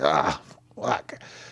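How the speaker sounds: mock pained groan, aching. Imitating a fighter whose back is hurting: imitating Idol in pain. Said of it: "He's like".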